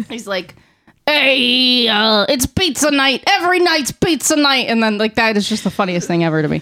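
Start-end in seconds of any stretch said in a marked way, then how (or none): 1.1-4.7 put-on five-year-old kid voice, New York accent, drawn-out "hey". Retelling a favorite Vine creator's bit, in a five-year-old New Yorker impression. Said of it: "this is my impression of a five-year-old New Yorker".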